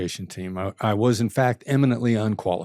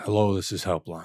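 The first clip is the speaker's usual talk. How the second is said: soothing, calm late-night FM radio DJ voice; 3 semitones lower, 4 dB quieter than usual. Retelling a first helpline call greeting: late night fm dj voice. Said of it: "the late night F M D J voice".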